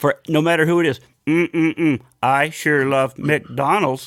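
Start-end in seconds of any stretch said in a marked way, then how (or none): 1.3-4.1 slow, mechanical, robotic computer-generated voice. Joking that commercials should use a computer voice: imitating a computer voice. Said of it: "just have now a computer voice".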